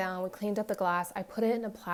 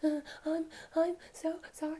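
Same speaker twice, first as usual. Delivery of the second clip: put-on, high, breathless sobbing, hyperventilating, gulping air; 8 semitones higher, 3 dB quieter than usual. Retelling a daughter's apology while she nearly hyperventilated: imitating hyperventilating.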